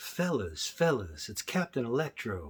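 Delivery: soft, cool, smooth hero voice. Addressing the fellas as Captain Electro, in a real cool, smooth voice. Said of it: "real cool, smooth voice".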